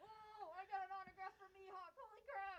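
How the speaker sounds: mock, very high, drawn-out, beside-himself excitement. Imitating how a friend would react to a gift: imitating someone losing his mind. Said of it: "would've lost his mind and go like".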